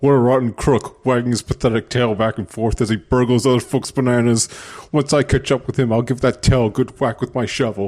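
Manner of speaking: animated-movie ape character voice. Voicing an old man character from the game. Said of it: "That was better than the Mario movie voice".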